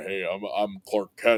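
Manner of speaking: low, cool-guy voice, dropped low. Retelling a scene at the Daily Planet: low Clark Kent voice. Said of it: "this low voice".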